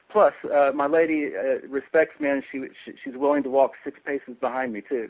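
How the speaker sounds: normal talking voice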